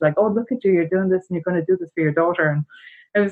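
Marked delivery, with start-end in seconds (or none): 0.2-2.5 mildly condescending, patronising, talking down. Retelling what a woman said in a store: imitating a condescending tone. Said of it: "it was a little condescending the way she said it".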